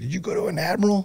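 play-acted, shrieked screaming, pitched way up high. Telling how a lieutenant commander phoned him: retelling a screaming officer. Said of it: "starts screaming".

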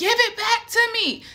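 screamed at a very high pitch. Speaker retells a dream, re-enacting screaming in it. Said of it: "So I'm screaming".

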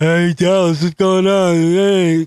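fake drunk slurring voice. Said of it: "it's slurring".

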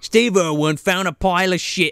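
put-on Australian accent slipping into Cockney. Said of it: "I'm going Cockney".

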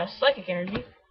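normal talking voice

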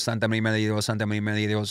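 very fast rushed delivery. Recalling how someone from childhood said it in Spanish, really, really fast prayer. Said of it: "like really, really fast".

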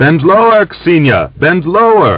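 very high, swooping shout. Grigor, overtaking the galloping horse, shouts to Aksinya as he draws level. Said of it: "shouted to Aksinya".

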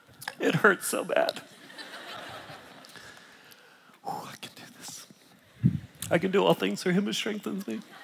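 teary, breathy, very hushed near-whisper. A speaker talking about beauty struggles to go on; tearful. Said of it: "Got tears in my eyes".

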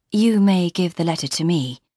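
ordinary delivery

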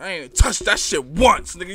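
very loud, aggressive, insistent voice. Mocking another speaker's line by repeating it: imitating aggressive delivery. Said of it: "You said that shit aggressive".

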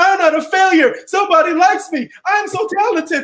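very high, shrieking, excited scream. Retelling getting a job offer, the speaker re-enacts screaming while jumping on the bed. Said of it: "And I'm screaming".

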